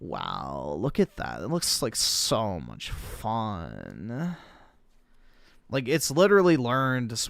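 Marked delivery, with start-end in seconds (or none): 0.0-4.4 put-on swooping, drawn-out California valley girl accent. Showing how people sound with the accent: california valley girl accent. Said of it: "the California Valley girl accent".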